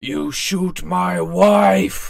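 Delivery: slow, rough monster holler. Voicing an ogre climbing out of mud toward the players: ogre yelling. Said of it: "jumps slowly out of the mud and yells".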